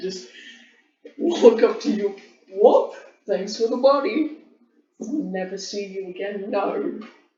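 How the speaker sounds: loud, cracking up, laughing through the words. Answering the other speaker's accusation, laughing at own joke. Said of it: "I'm laughing at my own joke".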